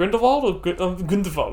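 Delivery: German-sounding pronunciation. Discussing a Harry Potter character's name, with German-sounding pronunciation. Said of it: "I'm making him sound German".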